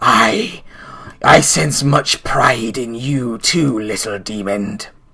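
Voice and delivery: low, growling creature voice. Narrating an attack, the speaker voices the creature growling down at you. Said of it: "it growls down at you like".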